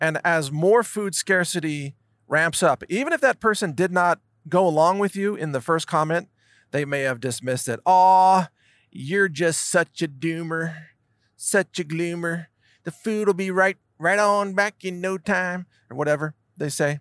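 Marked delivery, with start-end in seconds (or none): 7.8-15.7 put-on Fargo-style accent. Acting out a dismissive person's reply, in a Fargo-style accent. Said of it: "I don't know if that was a Fargo accent".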